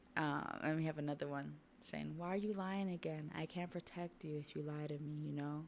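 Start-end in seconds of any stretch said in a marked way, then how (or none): none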